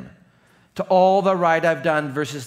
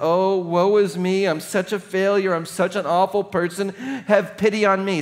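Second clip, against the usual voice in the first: self-pitying, woe-is-me martyr whine; 4 semitones higher than usual. Showing the voice of martyrdom and failure: mock self-pitying martyr voice. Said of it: "the voice of martyrdom and failure that says".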